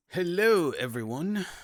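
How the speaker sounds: faintly English accent, very high and loud. Speaker greeting everyone, slightly English-sounding. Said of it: "I think that sounded a little English".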